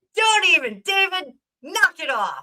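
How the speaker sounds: playful yelling. Telling a viewer to stop after his comment: playful yelling. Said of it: "why I'm yelling at Dave".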